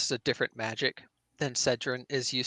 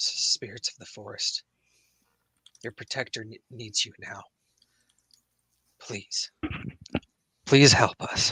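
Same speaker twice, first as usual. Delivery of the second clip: raised stage whisper; 2 semitones lower, 5 dB louder than usual. Gripping a locket, a player's character calls on the forest spirits: whispering. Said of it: "he just whispers to it".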